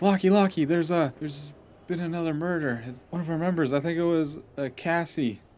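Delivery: mock scream. Recounting how someone burst into the building with news, retelling a scream. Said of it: "Just screaming".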